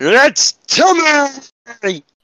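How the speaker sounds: put-on very high-pitched shrieking child's yell. Acting out a child carried off by an eagle, screaming as Tiny Tim. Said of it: "he's screaming".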